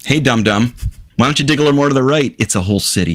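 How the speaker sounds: high, mocking, sarcastic jab. Mocking the discoverers of an ancient site who missed a city: sarcastic. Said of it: "I'm being sarcastic".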